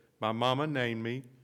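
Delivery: ordinary talk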